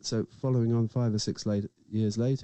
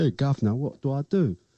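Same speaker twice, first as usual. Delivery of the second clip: put-on working-class British accent; 4 semitones higher, 4 dB louder than usual. Showing a line an actor playing a working-class man avoids: put-on working-class accent. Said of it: "doesn't want to put on a working class".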